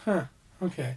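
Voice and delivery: put-on dismissive voice. Imitating Chevy Chase brushing away another character's idea. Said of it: "when he kinda just brushes away".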